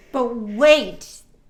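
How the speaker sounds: enthusiastic infomercial pitch. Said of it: "you gotta say it with enthusiasm".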